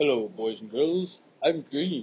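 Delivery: low-pitched voice. Introducing a new paint color while painting, voicing the color green. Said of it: "I'm gonna introduce another color".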